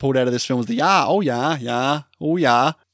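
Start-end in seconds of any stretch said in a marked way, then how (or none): 1.1-2.7 imitated Minnesota accent. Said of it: "the most memorable thing ... was the "yah,"".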